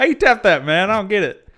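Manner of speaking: put-on Southern accent. Joking about how to tap a guitar part: put-on Southern accent. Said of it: "we're just gonna abuse the Southern accent this time".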